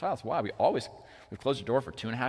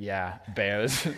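put-on very serious tone, lower; 3 semitones lower than usual. Retelling a child's fear, the speaker quotes his reply, imitating a really serious tone. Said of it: "in like a really serious tone".

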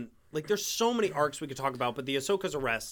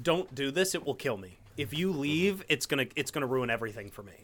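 emotional, pleading voice. Imitating Anakin begging someone not to leave: imitating Anakin's emotional plea. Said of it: "by his voice, he's just like".

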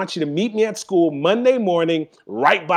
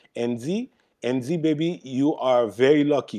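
put-on Haitian accent; 5 semitones lower, 4 dB quieter than usual. Retelling his mom coming up to him with news, in a strong Haitian accent. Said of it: "she has a pretty strong uh, Haitian accent".

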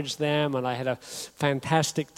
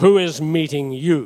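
mock severe, no-nonsense, loud, very stern delivery; 7 dB louder than usual. Retelling clearing customs, the speaker quotes the man at the last desk, imitating a very stern man. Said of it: "this guy in a very stern voice".

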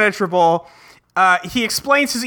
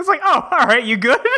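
ordinary delivery

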